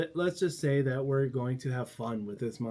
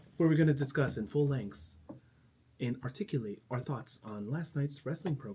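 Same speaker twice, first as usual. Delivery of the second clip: stiff, fake, overly proper delivery; 3 dB quieter than usual. Hosts jokingly introducing their wrestling show: mock proper library voice. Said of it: "It's like a sounds like a library voice".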